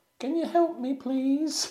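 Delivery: very high-pitched put-on little girl voice. Recounting how he mimicked a young girl to get a woman's help, young girl voice. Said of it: "mimicking a young girl to be like".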